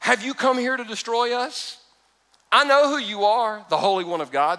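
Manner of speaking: high, jeering, mocking taunting tone. Quoting the words said to Jesus, imitating a mocking tone. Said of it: "said in kind of like a mocking tone".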